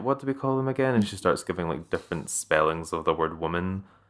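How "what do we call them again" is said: mock sarcastic delivery, higher. Acting out a quoted tweet mocking an article: imitating a sarcastic tone. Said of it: "this, like, sarcastic".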